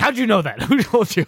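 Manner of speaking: mock frantic, high, rattled-off defensive panic. Retelling a regular reacting to being greeted by name: imitating defensive, freaking-out Rob. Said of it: "he got all like defensive and like freaking".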